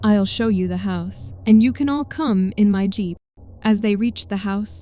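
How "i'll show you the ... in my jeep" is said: ordinary talk, nothing marked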